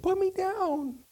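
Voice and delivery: tiny, very high, squeaky little voice. Retelling what a face in a candle said, tiny little voice. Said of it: "I hear this little voice say".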